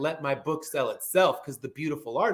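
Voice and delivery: ordinary delivery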